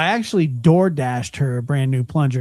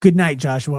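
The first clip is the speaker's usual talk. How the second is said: irritated, annoyed, pissed-off tone; 2 semitones higher, 3 dB louder than usual. Imitating how she says goodbye when she is pissed: imitating someone pissed off. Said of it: "you can tell she's, like, pissed".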